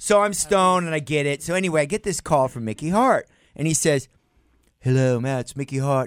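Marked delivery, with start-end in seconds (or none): 4.8-6.1 put-on English accent. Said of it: "He's not English".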